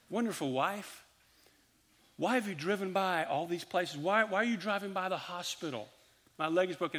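sweet, soothing, loving, calm voice. Retelling what he said to his wife as she drove, in a loving, calm voice. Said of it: "in my loving, calm voice".

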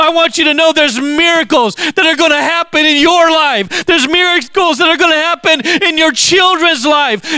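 shouting with excitement. Speaker addressing listeners, yelling because excited. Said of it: "I'm yelling because I'm excited".

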